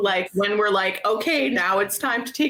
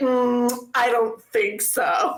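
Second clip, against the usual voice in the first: mock snooty, discerning judge voice; 3 semitones higher than usual. Pretending to judge a band audition: put-on discerning judge. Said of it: "discerning bitch one".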